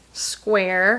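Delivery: unhappy, put-out, grudging tone on square. Showing the Lululemon size square, displeased 'square'. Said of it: "You can tell by my tone that I'm not pleased".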